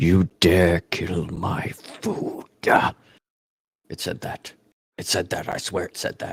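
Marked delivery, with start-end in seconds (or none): 0.0-2.5 slow, masculine, draconic monster voice. Retelling what a voice in the cave said: masculine draconic voice. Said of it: "it sounded masculine and draconic".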